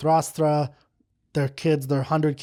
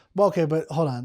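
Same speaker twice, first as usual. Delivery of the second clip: ordinary talk, nothing marked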